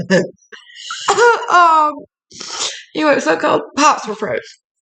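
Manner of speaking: high, tearful laughter pushed through the words.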